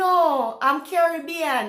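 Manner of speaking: ordinary talk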